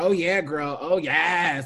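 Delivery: loud, drawn-out, affected put-on girlish voice.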